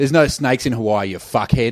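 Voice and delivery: put-on Australian accent. Retelling a man's reply to a snake warning, in a thick Aussie accent. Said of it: "with a thick Aussie accent".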